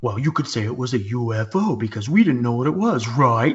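mock snide, snarky, dismissive pooh-poohing. Retelling how a dismissive astronaut answered about the sighting: imitating Buzz Aldrin, snarky. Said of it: "he just says it so, like, snarky".

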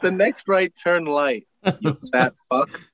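snide assistant voice. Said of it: "I would want my Siri to talk to me like that".

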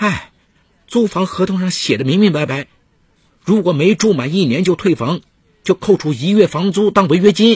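half-yelled, high-pitched, close to a shout. A tenant objects to a plan to tell the landlord they both move out: almost shouting. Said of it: "王倩差不多喊了起来".

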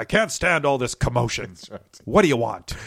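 put-on very loud, crabby, bellowing old man voice. Retelling a scene where Tron meets Dumont, mock-crabby Dumont voice. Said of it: "a crabby, crotchety".

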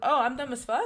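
play-acted baffled, confused, confrontational, challenging tone. Retelling their own reply after being called dumb, acting confused and confrontational. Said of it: "I said it confused".

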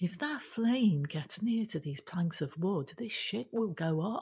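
ordinary delivery

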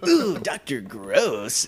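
put-on hyped club DJ announcer voice. The speaker shows off another voice he does, announcing the next act: strip club DJ voice. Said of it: "strip club DJ".

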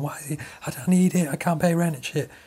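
mock crying and screaming, tearful, put-on. Retelling what a woman screamed on the phone, mock crying and screaming. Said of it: "She's crying, like screaming on the phone".

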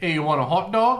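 put-on very high, very loud old-time Brooklyn gangster accent. Trying the accent after others say a name sounds like a gangster: 1920s Brooklyn gangster accent. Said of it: "I was gonna go for it".

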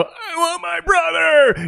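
wild, erratic outburst, very high, loud, drawn out. Imitating a game character voiced by Arin Hanson: erratic Arin Hanson impression. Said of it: "'cause he's just erratic".

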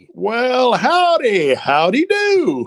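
very high, very loud, swooping, friendly Southern gentleman voice. A voice actor greets the interviewer in one of his voices; friendly Southern gentleman voice. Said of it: "is that one of the voices you do?".

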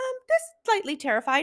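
tiny squeaky voice. Retelling a pregnant mother's answer when asked how she was doing: little squeaky voice. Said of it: "with this little squeaky voice".

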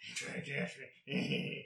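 raspy, whispered, taunting tone. Retelling how he taunts you on the Midnight Channel, in a raspy, soft Mitsuo voice. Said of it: "in his like raspy, like soft voice".

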